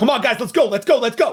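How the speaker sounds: urgent shout, pitched way up, loud. A player's character jumps up and heads for the exit, urging the group on with urgent shouting. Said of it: "just shouting like".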